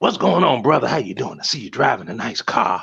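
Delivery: put-on Southern preacher accent. Retelling a man who came up to him outside a grocery store; Southern Baptist preacher impression. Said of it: "his standardized Southern Baptist preacher doing his best thing".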